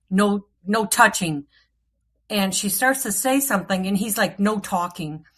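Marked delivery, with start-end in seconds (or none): 0.1-1.4 imitated male caveman voice. Retell how Cody reacted when she was going to look at the bag, in Cody's Neanderthal voice. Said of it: "in his Neanderthal voice is like".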